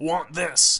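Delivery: put-on high, primitive cave child voice. A parent retells the girl pointing at something she wants, in a cave child voice. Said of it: "said in her cave child voice".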